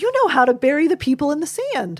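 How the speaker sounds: bright, cheery, upbeat, happy, excited sing-song voice. Demonstrating an inaccurate reflection to a solemn child, happy, excited voice. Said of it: "using a happy or excited voice".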